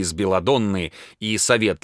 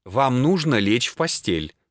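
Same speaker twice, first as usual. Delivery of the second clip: plain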